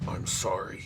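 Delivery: soft, hushed whisper. Narrating Ugo, an orc, speaking to her before he throws her; whisper. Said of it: "He whispers to her".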